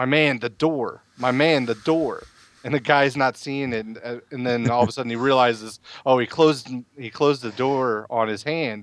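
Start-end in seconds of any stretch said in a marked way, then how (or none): 0.0-2.2 strained, tense mumble, sounding in pain. Retelling a moment of hidden pain: Bubba Rogers mumbling under his breath. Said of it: "he's mumbling under his breath".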